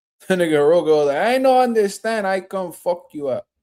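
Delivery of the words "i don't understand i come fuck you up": put-on light, slight Spanish accent. Quoting what Rogo said, in Rogo's Spanish-sounding accent. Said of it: "that sounds a little bit Spanish".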